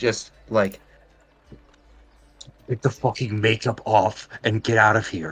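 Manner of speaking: loud stage whisper. In a roleplay, a character hiding from passing guards plans an escape, whispering. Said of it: "I'm just going to whisper".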